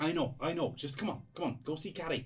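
put-on Liverpool accent. Voicing the dad in a game scene, telling his child to get back: scouse accent. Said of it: "dusting off my Scouse accent".

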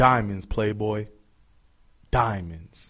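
flashy, needling, taunting, show-off boast. Retelling what Aaron Hernandez said while flashing his rosary: imitating Aaron Hernandez. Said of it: "picks up his diamond bezeled rosary bead".

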